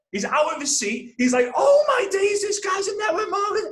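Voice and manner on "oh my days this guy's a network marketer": mock excited shouting outburst, much higher. Retelling their dad jumping out of his seat at a screening, imitating him freaking out. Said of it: "He's freaking out".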